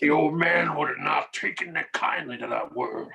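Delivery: put-on classic cowboy-movie star delivery, old Western actor voice. Discussing a book's characters with another speaker, slip into a Sam Elliott impersonation. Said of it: "best Sam Elliott impersonation I've ever heard".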